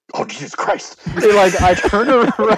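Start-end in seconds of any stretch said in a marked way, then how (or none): 0.1-1.0 lower, quieter, faster mutter under the breath. Speaker retelling a remark only he overheard, retold mutter under his breath. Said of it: "It was more like it was under his breath".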